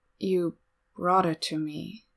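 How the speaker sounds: slowly, as if stunned. A narrator voices a character handed his bento, slow and dazed. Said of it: "Domiki says slowly".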